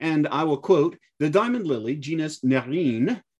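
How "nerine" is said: put-on French accent. Reading a quote about a flower, saying Nerine in a French accent. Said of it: "that was my French accent".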